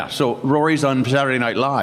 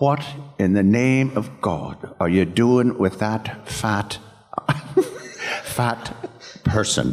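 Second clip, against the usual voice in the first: put-on Irish-accented voice; 2 semitones lower than usual. Speaker quoting their mother's overheard words, imitating mom's Irish accent. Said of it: "in the inimitable Irish accent".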